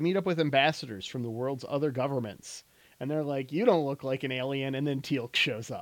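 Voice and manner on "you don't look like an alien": plain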